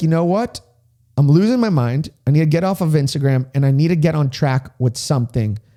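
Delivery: ordinary delivery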